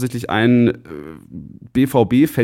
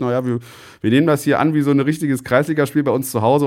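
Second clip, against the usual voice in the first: ordinary talk, nothing marked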